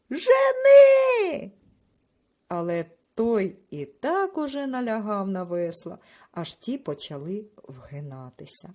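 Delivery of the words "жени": drawn-out screech, very high-pitched and very loud. Narrator reads the fat man turning to the younger one, shrieking. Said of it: "верескнув".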